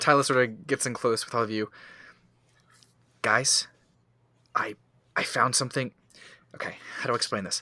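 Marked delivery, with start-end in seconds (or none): 3.2-7.6 eager, jittery, excited, nervous energy. [name] gets in close to the group: excited and nervous. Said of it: "a lot of excitement and nervous energy in her".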